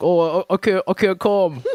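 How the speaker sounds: very slow, high Brooklyn voice. Retelling how cool brooklyn people described straight guys, straight brooklyn guy impression. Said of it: "that's my impression of a straight man in Brooklyn".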